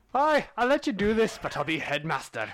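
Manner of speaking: bad fake Scottish accent. Imagining what a scottish man would say about the school: terrible scottish accent. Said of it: "a terrible Scottish accent".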